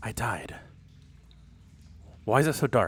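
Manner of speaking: soft voice with a faint hint of fear creeping in. Narrating a game, the speaker voices a character who just died: hint of fear. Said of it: "you can almost hear the fear in his voice".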